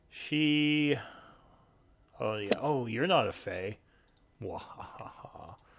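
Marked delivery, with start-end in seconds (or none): 2.2-5.5 put-on old hag character voice. Game master voicing the hag as she turns on a player's character, speaking as the hag. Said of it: "the hag goes".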